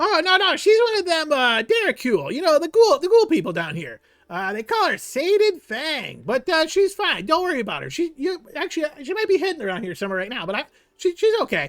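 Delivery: very high-pitched, swooping kobold creature voice. Voicing a kobold explaining a ghoul friend to the party: Jiro the kobold voice. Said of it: "this kobold face emerges".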